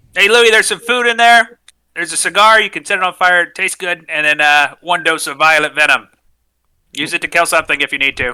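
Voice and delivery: calling out after someone. Yelling after a rat person who skitters off into the darkness: yelling. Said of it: "I'm gonna yell".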